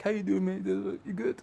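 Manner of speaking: calm, chill, light, very high and soft. Contrasting Colin's bad-boy past with his later manner: imitating Colin's calm, chill manner. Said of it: "the nice little calm, chill".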